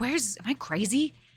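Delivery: muttering to himself. Retelling how he searched for Griffo, imitating his muttering. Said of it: "I hear I hear him muttering like".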